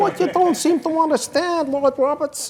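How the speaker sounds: very high, loud, heckling jeering tone. Doing an impersonation of a colleague after being asked. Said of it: "Very good impression, by the way, [name]".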